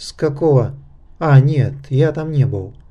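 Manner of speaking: plain reading voice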